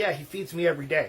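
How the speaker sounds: usual speaking voice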